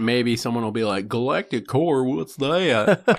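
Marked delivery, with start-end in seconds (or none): 1.1-3.2 very slow, high, stretched put-on southern drawl. Imitating a listener who doesn't know a term, in a put-on southern accent. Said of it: "I give a southern accent to".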